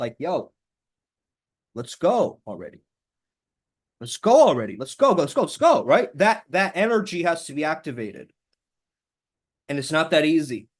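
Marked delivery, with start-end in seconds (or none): 0.2-5.8 authoritative, a bit aggressive, pushy, swooping and rising pitch. Showing how to get authoritative with one's inner voice; a little aggressive. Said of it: "a little bit aggressive with that voice".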